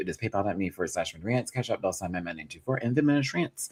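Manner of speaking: rapid-fire, rushed, rattled-off delivery. Reading out payment handles for tips to viewers, speaking very fast. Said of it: "I'm saying that so fast".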